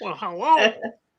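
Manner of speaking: very high cartoon parrot voice. Showing how a parrot in a cartoon says hello: cartoon parrot voice. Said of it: "there's a parrot in a cartoon that sounds like that".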